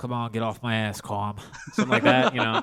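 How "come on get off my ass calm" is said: put-on mobster voice. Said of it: "I know I can do this voice".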